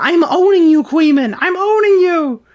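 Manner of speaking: very high, squealing, crying whine. Retelling how someone sounded while debating: imitating a squealing, crying sound. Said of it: "he does the same squealing, crying sound".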